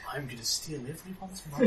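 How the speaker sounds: hushed voice. As a character following up a quip about subtlety, dropped voice. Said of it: "Brianna drops her voice".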